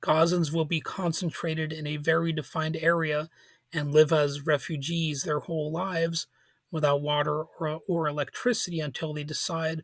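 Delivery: normal talking voice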